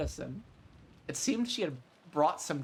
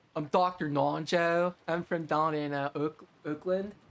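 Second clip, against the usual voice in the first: put-on Pittsburgh yinzer accent. Choosing to give a character a Yinzer voice, introducing Doctor Nonjo in a Yinzer accent. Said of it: "should I give somebody a Yinzer voice?".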